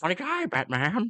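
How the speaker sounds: high, taunting, offhand comic-book villain voice. Doing the film villain line again: Heath Ledger Joker impression. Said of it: "That's my Heath Ledg-".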